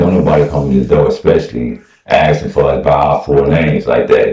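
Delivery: normal talking voice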